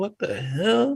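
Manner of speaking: high, slow, drawn-out baffled disbelief.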